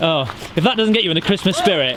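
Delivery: plain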